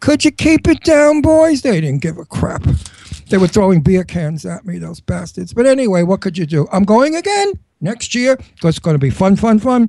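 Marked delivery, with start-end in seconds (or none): 0.0-1.6 put-on loud, high old woman hollering. Retelling calling out the window at loud dancers: imitating an old lady yelling. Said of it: "out the window like some old lady yelling".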